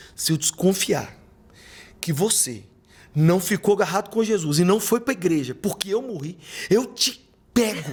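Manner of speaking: put-on angry, scolding voice. Imagining what his late mother would say, imitating an angry mother scolding. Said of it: "Eu imaginei ela com a cara brava, falando assim".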